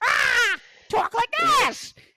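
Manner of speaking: squawking parrot voice, very high-pitched. Joking about going off at the mouth for daily clickbait content, demonstrate it squawking like a parrot. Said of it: "my voice is high enough".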